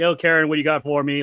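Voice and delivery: easygoing, all-happy, happy-go-lucky cheerful tone. Imitating a coach chatting with a reporter before camp: imitating someone happy-go-lucky. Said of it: "all happy, go lucky".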